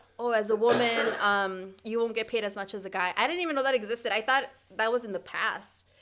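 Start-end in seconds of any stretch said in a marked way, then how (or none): none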